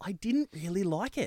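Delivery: ordinary delivery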